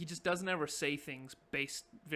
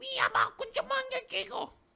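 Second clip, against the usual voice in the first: very high, gibberish goblin shout; 7 dB louder than usual. Voicing a goblin yelling back down a tunnel: yelling in Goblin. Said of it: "he just goes like".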